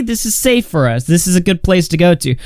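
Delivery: ordinary talk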